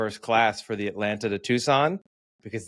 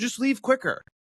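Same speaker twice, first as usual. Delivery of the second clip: high, raised yelling; 14 semitones higher than usual. Retelling a passenger urging people off a plane: imitating someone yelling. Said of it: "Don't yell at people to move quicker".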